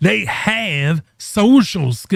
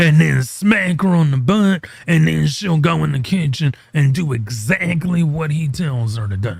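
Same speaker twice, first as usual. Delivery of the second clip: ordinary talk, nothing marked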